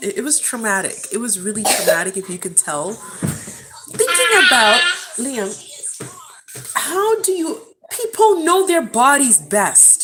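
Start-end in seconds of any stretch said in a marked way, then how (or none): 2.9-10.0 loud, high, slow distraught emotional outburst. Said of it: "I'm getting emotional".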